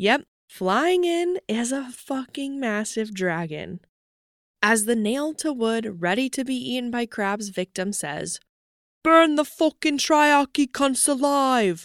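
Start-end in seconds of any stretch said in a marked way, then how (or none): 9.0-11.9 put-on English accent, pitched up. Speaker recapping a scene, voicing a victim's line in a put-on english accent. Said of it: "Is my English accent good?".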